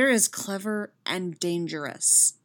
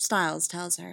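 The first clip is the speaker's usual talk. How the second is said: ordinary delivery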